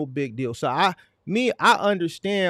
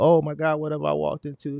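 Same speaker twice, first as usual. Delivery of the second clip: mock, theatrical, dramatic shock and surprise. Imitating a man who knows the camera is rolling: imitating put-on theatrical shock. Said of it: "that's the theatrics".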